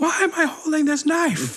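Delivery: mock very high, slow, drawn-out comic screech. Retelling a scene from the episode, imitating Martin Short screaming. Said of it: "He just screams".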